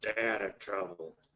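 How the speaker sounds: grumbling, grumbled delivery. Narrating the game, voicing a character as the players go in: grumbling. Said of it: "He grumbles".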